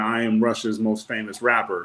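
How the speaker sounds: ordinary talk, nothing marked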